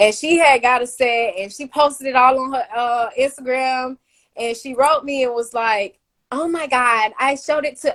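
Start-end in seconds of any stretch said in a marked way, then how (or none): 6.3-8.0 imitated girl's voice. Retelling a message from a girl who wrote to the speaker, imitating the girl's voice. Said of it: "I'm doing the voice based off of her".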